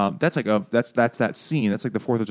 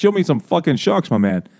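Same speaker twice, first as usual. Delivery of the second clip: put-on Italian-American accent; 7 semitones higher, 5 dB louder than usual. Retelling a movie scene with a family from Queens: Italian-American stereotype voice. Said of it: "the nice Italian-American stereotype".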